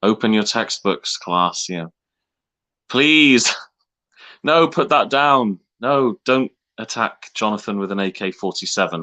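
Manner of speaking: frazzled, flustered voice losing control, no authority. Mocking a substitute teacher's voice, imitating a teacher losing control. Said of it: "the substitute teacher losing control".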